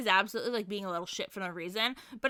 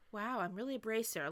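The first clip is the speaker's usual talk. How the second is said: put-on musing tone, much quieter; 10 dB quieter than usual. Recapping a show, acting out Joshua's reaction to Estelle, mock-contemplative. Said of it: "kind of contemplative".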